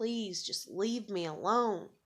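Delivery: put-on pleading through tears. Speaking to the person who kept calling, retelling tearful begging. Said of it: "I'm begging you and I'm crying and I'm like".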